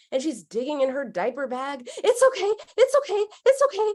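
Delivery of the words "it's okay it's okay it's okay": put-on very high, loud, frantic panicked soothing tone. Retelling how a mom comforted her crying toddler: imitating a panicked mom.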